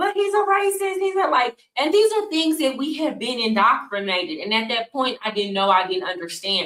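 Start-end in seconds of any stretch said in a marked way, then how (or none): 0.0-1.3 mock, very high-pitched, shrill shout. Retelling how people in a crowd yelled at a young man: imitating people yelling. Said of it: "yelling at him".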